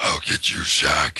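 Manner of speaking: put-on creature voice. Asking whether to use it in the game, speaker tries the Lava Monster voice. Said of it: "Do you think I should do Lava Monster voice?".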